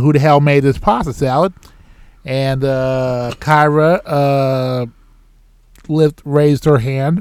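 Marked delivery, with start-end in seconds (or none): none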